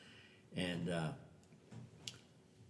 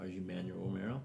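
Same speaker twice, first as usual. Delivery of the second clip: ordinary delivery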